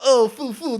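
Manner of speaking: very high, terrible put-on French accent. Retelling someone walking an invisible dog, in the worst French accent. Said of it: "He's doing the worst French accent I've ever heard in my life".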